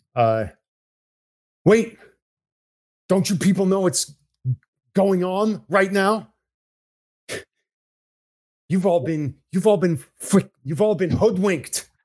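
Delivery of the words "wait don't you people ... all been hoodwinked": high-pitched calling out. Playing a character locked in a room, yelling through the door: screaming through the door. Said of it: "I scream through the door".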